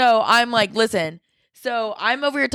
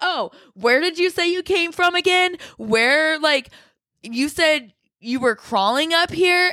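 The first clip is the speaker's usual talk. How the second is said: put-on, deliberate, high, slow chatter for show; 5 semitones higher than usual. Retelling talking on purpose to a stranger so a hidden phone hears: retelling talking really loud. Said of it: "so then I start talking really loud".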